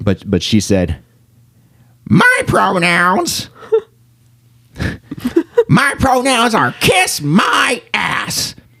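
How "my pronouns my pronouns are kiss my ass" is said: very high, very slow, swooping, stretched sing-song jab. Retelling a stand-up joke in a Roseanne Barr impression. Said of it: "I'm gonna do my best Roseanne Barr impression here".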